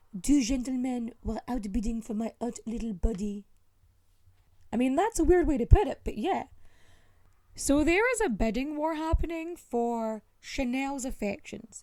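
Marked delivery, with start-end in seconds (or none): 0.2-3.4 terrible put-on French accent. Read out what Chanel is quoted as saying, with a terrible French impression of Chanel. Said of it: "time for my terrible French impression".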